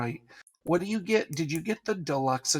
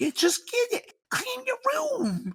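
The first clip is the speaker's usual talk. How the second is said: very high, sing-song, nagging mother voice. Teasing another speaker about sounding like a nagging mother: imitating a nagging mother. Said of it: "You sound like a nagging mother".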